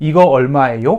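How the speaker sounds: gentle upward lift on the final syllable 요. Korean lesson on asking prices, marking a question: slight rise on final syllable 요. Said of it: "살짝 올라가죠".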